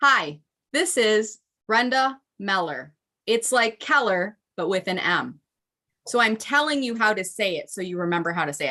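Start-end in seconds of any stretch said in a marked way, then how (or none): 0.0-5.4 slow, careful, deliberate, word by word. Giving a LinkedIn tip on introducing your name, saying name slowly. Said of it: "I'm going to say my name slowly".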